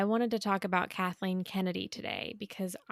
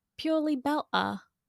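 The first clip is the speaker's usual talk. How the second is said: put-on British accent, pitched up; 7 semitones higher than usual. Saying the show's name in the host's accent: imitating the host's British accent. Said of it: "I cannot say that phrase without doing it in an accent".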